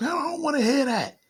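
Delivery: mock old woman, sudden high-pitched scream. Retelling how a grandmother reacted to the doctrine: imitating grandmother screaming. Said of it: "she screamed at me like".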